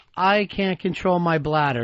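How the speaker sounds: ordinary delivery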